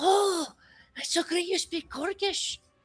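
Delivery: put-on childlike, excited whisper. Voicing kids who overhear the party speaking Orcish: kids whispering excitedly. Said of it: "whispering in, like, Orcish".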